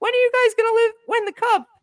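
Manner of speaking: put-on very high, loud, squeaky little kid voice. Retelling a question he asked at a fan q&a at eleven, high-pitched kid voice. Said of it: "a really high voice".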